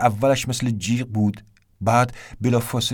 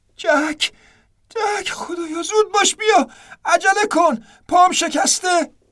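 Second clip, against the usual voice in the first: very high, drawn-out scream; 3 dB louder than usual. Someone who has fallen with a broken leg screams to the narrator, screaming for help. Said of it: "دوباره صدای فریادش بلند شد".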